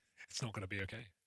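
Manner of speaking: low, hushed, anxious, uneasy worried voice. Teased for a reassuring tone while commenting on a match, worried voice. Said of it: "You got to do your worried voice".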